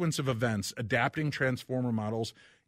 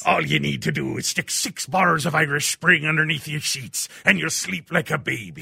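put-on cartoon pirate voice; 5 semitones higher, 8 dB louder than usual. Reading a listener's leg cramp tip aloud: pirate from SpongeBob SquarePants voice. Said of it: "I suddenly turned into the pirate from, uh, SpongeBob SquarePants".

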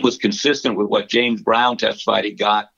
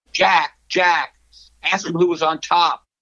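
shrill, high-pitched yelling voice; 7 semitones higher than usual. Retelling how Pee-wee yelled at Jack, retelling Pee-wee's high-pitched yell. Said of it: "Pee-wee yells at Jack in this high-pitched voice".

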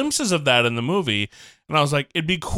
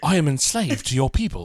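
deliberately terrible put-on British accent. Retelling a beach scene, quoting Samson in a terrible British accent. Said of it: "The British accents are terrible".

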